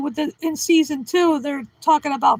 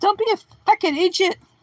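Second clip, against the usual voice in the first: just a light hint of Irish accent; 3 semitones higher than usual. Trying out accents, the speaker does a line with a little bit of irish accent. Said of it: "like a little bit of Irish".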